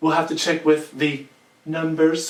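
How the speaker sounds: weak, flat, unconvincing impersonation voice.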